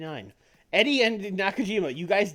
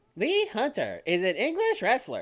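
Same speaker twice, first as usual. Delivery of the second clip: put-on trendy online girl voice; 2 semitones higher than usual. Asked by the other speaker to do the TikTok girl voice, trying it. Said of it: "That's like the best I can do".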